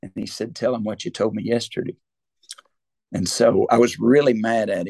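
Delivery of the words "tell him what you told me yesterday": soft, hushed, close-to-the-ear stage whisper. Retelling what someone half-whispered in the speaker's ear: imitating a half-whisper. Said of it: "he just whispered in my ear".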